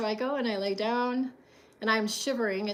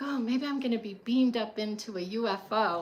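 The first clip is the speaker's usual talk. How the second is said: play-acted thrilled, excited, eager tone. Retelling standing by a fountain in a storm: imitating own past excitement. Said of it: "I'm getting all excited".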